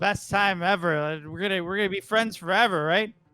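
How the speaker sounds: put-on slurred drunk speech. Voicing drunk characters thanking the party at a birthday: drunk slurring. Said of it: "they're drunk, right? They're, like, slurring".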